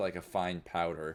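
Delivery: ordinary talk, nothing marked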